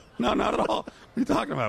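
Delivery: laughing while speaking.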